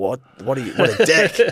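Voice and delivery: put-on crying. Retelling being stuck in traffic for forty minutes: retelling own crying. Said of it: "I'm crying again, being like".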